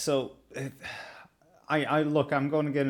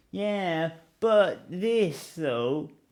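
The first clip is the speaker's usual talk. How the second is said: put-on effeminate voice; 5 semitones higher than usual. Describing a moment from someone's emergency episode, imitating Carl's effeminate voice.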